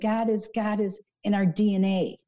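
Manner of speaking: slow, acted, exasperated, frustrated, patience-running-out tone. Retelling what someone insisted about God: imitating frustrated speech. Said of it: "he's getting really frustrated with this".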